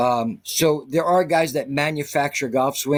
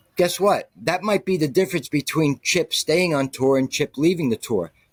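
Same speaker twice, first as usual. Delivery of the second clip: ordinary delivery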